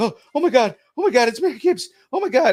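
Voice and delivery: very high, swooping, gushing starstruck excitement. Retelling walking up to an actress while acting all excited: imitating own acted excitement. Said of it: "just acting all excited".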